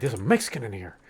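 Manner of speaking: imitated shocked male voice. Retelling a story his dad told: imitating a shocked man. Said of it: "he was shocked".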